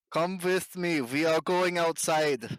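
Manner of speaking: loud, slow yell. Shouting to another character over loud music, in character: yelling. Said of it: "jeez, no need to yell".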